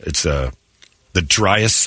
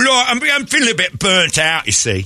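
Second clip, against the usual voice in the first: put-on Cockney accent with a sing-song lilt; 14 semitones higher than usual. Answering a boss named Tyler about being burnt out: put-on British accent. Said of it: "They're breaking out the Cockney accents".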